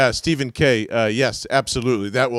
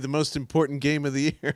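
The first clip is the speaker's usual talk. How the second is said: acted-out, dripping, very heavy sarcastic tone; 4 semitones higher, 5 dB quieter than usual. Joking to Johnny about a losing game: sarcastic. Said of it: "very sarcastically".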